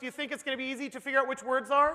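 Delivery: words tumbling out nonstop, really fast. Demonstrating a speech recognition challenge to an audience: talking really fast. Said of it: "If I talk really fast like this".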